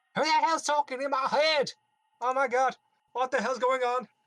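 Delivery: piercing, shrill, very high, very loud shout. Voicing someone inside the caravans startled by a voice: shouting. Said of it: "You randomly hear shouts".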